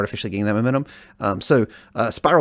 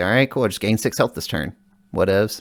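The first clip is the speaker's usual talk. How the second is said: ordinary talk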